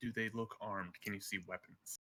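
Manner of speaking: half-whispered as softly as possible, very soft. Speaking in the game, half-whispering as quietly as possible to another character: half-whispering. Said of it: "I'm going to whisper as quietly as I can".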